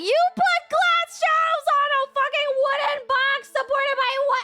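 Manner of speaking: put-on alarmed outburst. Retelling a reaction to something she built, retelling freaking out. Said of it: "I was like freaking out".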